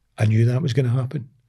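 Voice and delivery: ordinary talk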